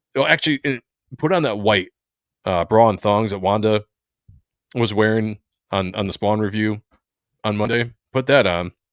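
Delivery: ordinary talk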